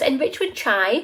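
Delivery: plain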